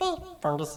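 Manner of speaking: very high, confused, puzzled golem voice. Voicing the golem greeting fungus, confused golem voice. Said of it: "Kinda looks a little confused at him and says".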